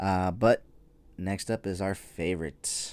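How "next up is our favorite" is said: dry, sarcastic tone with a rising end. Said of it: "I say that very sarcastically".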